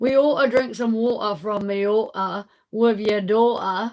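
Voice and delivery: put-on English accent. Asked about british accents, the speaker demonstrates an english accent. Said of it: "That's the English one".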